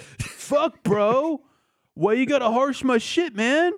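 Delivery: very high, dopey, lazy put-on surfer voice. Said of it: "a guy doing a shitty Michelangelo impression".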